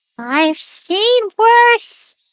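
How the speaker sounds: put-on high, little elderly woman's voice. Replying to the other speaker's question, in an old lady voice. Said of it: "You took your old lady voice".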